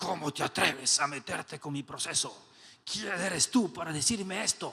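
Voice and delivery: twisted, possessed, demonic voice. Acting out a reaction to being challenged, changing the voice: The Exorcist possessed voice. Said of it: "cambiando la voz tipo el exorcista".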